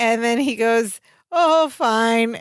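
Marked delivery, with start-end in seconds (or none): 1.3-2.4 put-on sobbing voice. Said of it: "But he's sobbing while he says".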